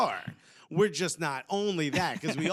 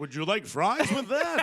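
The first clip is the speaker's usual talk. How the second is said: pitched-up soccer commentator voice, match announcer style; 5 semitones higher, 3 dB louder than usual. Joking about John Strong, doing his announcer voice on an ordinary line. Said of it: "have that announcer voice".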